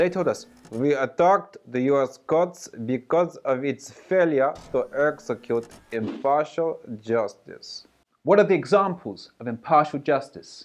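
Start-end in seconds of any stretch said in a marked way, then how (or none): 0.7-7.9 slow, put-on East European accent. Voicing the hacker group's quoted answers, in a put-on East European accent. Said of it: "I am deciding to adopt an East European accent".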